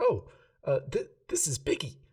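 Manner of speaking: put-on bright, high, sing-song little girl voice. Voicing a little girl showing her bear to a guard: brightened child voice. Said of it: "she kinda brightens up".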